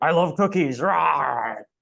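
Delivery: rawr said high, loud and drawn out. Following up the Garfield bit with another quick impression: Cookie Monster impression. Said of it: "here's my impression of a Cookie Monster".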